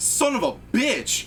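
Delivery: very high, slow, drawn-out, pained cry. Voicing an NPC who curses after being hit: NPC cursing in pain. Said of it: "You hear him actually go".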